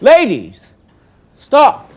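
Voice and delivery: very loud, very high, swooping shout. Stopping two arguing ladies from fighting: raised voice. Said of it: "I'm sorry I had to raise my voice".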